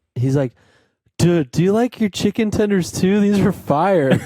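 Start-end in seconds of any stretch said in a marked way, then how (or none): 1.1-4.1 put-on very high, clueless, spaced-out stoned voice. Retelling what a very high friend said at dinner: imitating Andy being very high. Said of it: "so high he thought he was eating chicken tenders".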